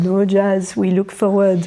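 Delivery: put-on French accent, plainly put on. Speaker recalls Seb's reaction after an emotional moment, imitating Seb's French accent. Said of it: "In his French accent".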